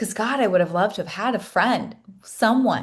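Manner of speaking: emotional voice welling up, close to tears. Recalling a friend's apology, the speaker gets emotional while telling it: getting emotional. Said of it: "I'm getting emotional now".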